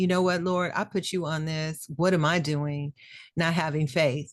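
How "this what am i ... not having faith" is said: ordinary talk, nothing marked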